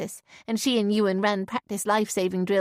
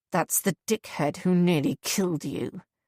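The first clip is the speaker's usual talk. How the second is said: grave, serious, threatening, menacing tone. Reading a man's warning about a stranger: serious and menacing. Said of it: "far more serious and menacing now".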